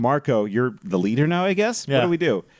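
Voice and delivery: normal talking voice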